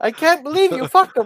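very high, furious, outraged voice. Acting out a friend's mom reacting: imitating a friend's furious mom. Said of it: "I don't know how to do your mom's voice".

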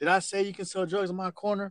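mild, held-back, confrontational mock yell. Retelling how one guy yelled at another selling drugs, imitating someone yelling. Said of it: "he's yelling at him".

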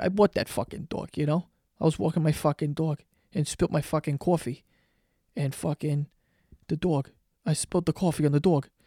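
exaggerated New York accent. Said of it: "I sound very New York".

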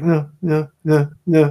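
very slow, drawn-out mumble. Retelling a man's protest as a woman comes at him with a needle, imitating mumbling. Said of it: "he kind of like mumbles like".

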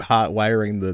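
ordinary talk

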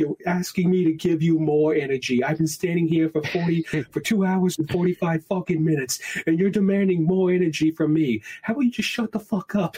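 full-on comedic rant, stand-up style. Retelling a comedian's bit about a long ride line: imitating Bill Burr ranting. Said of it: "just like a total, like, Bill Burr stuff".

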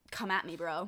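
plain

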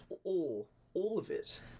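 poor British accent. Asked to do a British accent again, bad British accent. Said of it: "give us a British accent again".

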